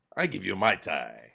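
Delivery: rough, creaky, croaking alien voice. Riffing on accents, the speaker delivers a line in Watto's voice: Watto voice. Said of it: "Watto's voice to say".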